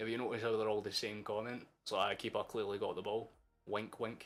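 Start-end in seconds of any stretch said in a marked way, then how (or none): none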